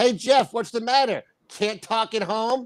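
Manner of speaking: loud, high-pitched yell. Retelling how a coworker leaned out and yelled at Jeff: imitating Beck yelling. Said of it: "he leans out and yells at Jeff".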